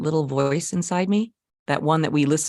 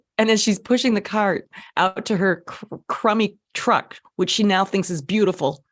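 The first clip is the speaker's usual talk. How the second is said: normal talking voice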